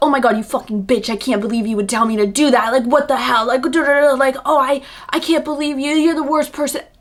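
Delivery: freaked-out, losing it, ranting, cursing tirade. Acting out a hypothetical overreaction to a suggestion: imitating someone freaking out. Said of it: "You wouldn't freak out and be like".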